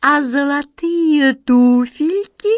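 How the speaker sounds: honeyed, sweet wheedling. The chief smile collector, creeping up on a girl: even more sweetly. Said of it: "еще слаще проговорил".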